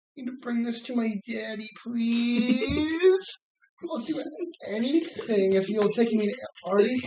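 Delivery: very high, drawn-out moan, stretching "please". Retelling how a cartoon character talked, imitating a moaning way of talking. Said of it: "kind of moan when he talked".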